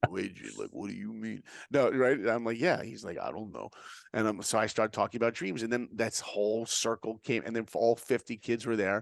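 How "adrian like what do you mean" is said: put-on tough-guy voice, much quieter. Retelling a talk with a high school student, voicing him in a Rocky voice. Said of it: "doing my Rocky voice".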